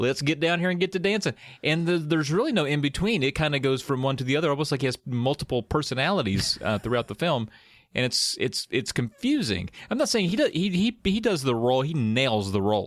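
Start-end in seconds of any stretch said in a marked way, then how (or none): 0.0-1.3 pitched-up, high, countrified bumpkin voice. Imitating Johnny's other accent in the film: country voice. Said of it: "sometimes he is kind of a countryman".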